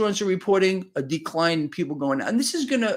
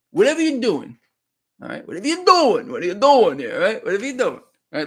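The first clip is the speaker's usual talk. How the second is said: put-on little New York accent, loud, fast; 5 dB louder than usual. Reading a post to his audience, in a little new york accent. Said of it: "little New York accent here".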